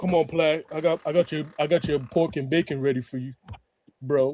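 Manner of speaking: put-on deep female voice. Imitating a woman with a deep voice talking to a man: imitating a deep-voiced woman. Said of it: "She be like".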